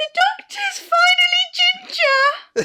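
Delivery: put-on very high, loud, blubbering belly-cry sobbing wail. Speaker acts out her past self answering her worried dad: retelling belly crying. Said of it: "belly crying".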